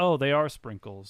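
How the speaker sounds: flat, unhappy tone with no joy at all. Retelling eating ice cream during a story, retold in an unhappy tone. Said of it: "but not like in a happy tone".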